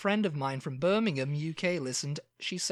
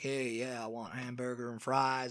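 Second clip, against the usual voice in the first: put-on American accent, casual tone; 5 semitones lower, 5 dB quieter than usual. Retelling an American customer ordering food: imitating an American customer. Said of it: "an American came in and was like".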